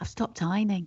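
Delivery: secretive, hushed half-whisper. Admitting something to the other speaker during a chat, half-whispering. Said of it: "I'm whispering".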